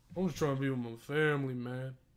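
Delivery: barely audible, low, soft mumbling. Retelling what Michael Vick said when the speaker heard him, mumbling like Michael Vick. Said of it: "He mumbled that shit".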